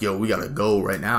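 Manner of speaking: ordinary talk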